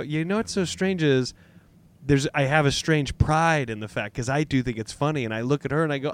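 normal talking voice

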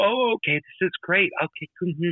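sweet-as-pie evil lady voice. Describing a film villain who seems sweet: imitating a sweet evil lady. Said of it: "she comes off as just, like, so sweet in apple pie".

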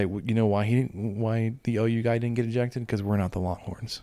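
ordinary talk

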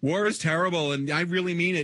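preachy, over-serious tone. Mocking the show's later seasons as preachy: mock serious yelling. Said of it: "you can tell I'm serious because I'm yelling at you".

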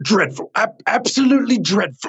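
put-on very high, curmudgeonly old British man voice. Retelling what a stranger asked at the unveiling: curmudgeonly old British man voice. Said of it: "curmudgeonly old British man comes to me and goes".

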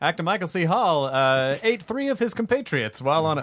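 put-on radio announcer voice. Riffing with others, the speaker slips back into the radio voice. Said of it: "I'm back into the radio voice again".

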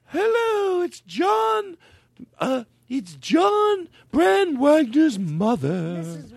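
mock-elegant, posh put-on voice. Mocking how someone does her voice: posh, elegant put-on voice. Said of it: "How come whenever he does my voice, he makes me sound so".

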